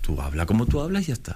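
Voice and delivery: ordinary talk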